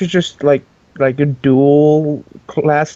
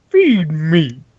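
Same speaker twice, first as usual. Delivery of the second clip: put-on tiny monster creature voice. Acting out a tiny plant from a horror movie, super deep voice. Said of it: "he just this super deep voice".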